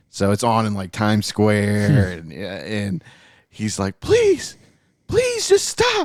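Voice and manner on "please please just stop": very high, tearful crying voice. Retelling a show scene where a beaten character begs, imitating a crying plea.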